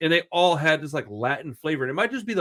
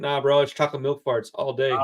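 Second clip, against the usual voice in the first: ordinary talk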